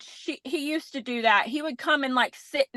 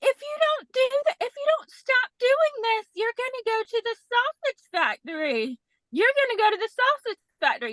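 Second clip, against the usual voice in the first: sweet, really nice, very high-pitched voice; 10 semitones higher than usual. Showing how you scold a dog, in a really nice voice. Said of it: "you're talking in this really nice voice".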